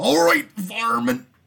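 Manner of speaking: gruff, shrill, high, rough wrestler yell at full volume. Imagining a Looney Tunes game, the speaker voices a line: Macho Man impression. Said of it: "No, that was Macho Man".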